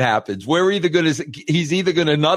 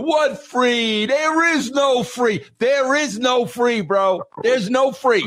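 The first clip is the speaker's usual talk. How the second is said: put-on Italian-American accent, pitched up higher; 9 semitones higher than usual. Retelling a movie scene where Sal turns around: Danny Aiello Italian accent. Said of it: "Danny Aiello in that Italian voice".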